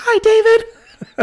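very high, loud toy voice, pitch way up, called out. [name] makes a toy figure greet David: Mickey Mouse voice. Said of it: "uses the high-pitched voice".

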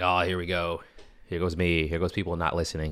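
plain

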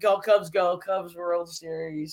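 ordinary talk, nothing marked

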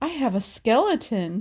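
put-on awestruck kid voice, slow and totally awestruck. Retelling a kid seeing his own chest x-ray, imitating an awestruck kid. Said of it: "in an awestruck voice".

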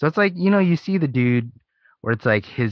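normal talking voice

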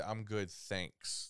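put-on arrogant, breathy, dismissive whisper. Retelling the other speaker's reply to a woman, imitating an arrogant reply. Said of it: "Like, real arrogant?".

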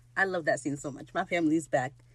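ordinary delivery

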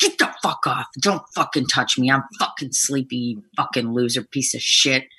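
mock-angry outburst. Describing being woken up in the morning: acting out being mad. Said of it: "and you're, like, mad".

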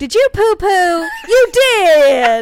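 booming, very loud, high grandma voice. Retelling the grandmother checking on the kids in a playhouse, imitating Mimi the grandmother. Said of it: "your voice of that grandma".

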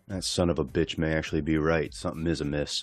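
mock muttering under the breath. Retelling a past moment, repeating what was said as a mutter under breath. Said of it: "under my breath".

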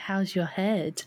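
put-on horror-film psycho-killer voice. Recounting someone's funny delivery, imitating a horror-film psycho killer. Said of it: "like the psycho killer is like".

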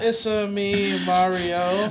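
put-on over-the-top Italian accent. The group agrees to do Italian voices; one speaker does a Mario voice. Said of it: "Why don't we all just do our favorite Italian voice?".

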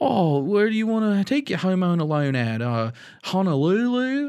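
put-on, laid-on crazy Australian accent, high and slow. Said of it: "their accent's pretty crazy".

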